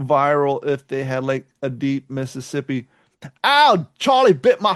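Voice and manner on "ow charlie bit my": put-on British accent slipping in, pitched up. Trying to redo a viral video line as Southern, but still in a British accent. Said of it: "I'm still doing the British accent".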